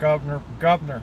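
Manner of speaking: Baltimore accent, dropped syllable. Speaker shows how people in Baltimore say a word: Baltimore accent. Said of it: "as they say in Baltimore".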